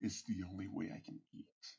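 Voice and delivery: growled, snarling, bitter, menacing voice. Narrator voicing a character's reply to a player, snarling. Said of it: "He snarls at you and says".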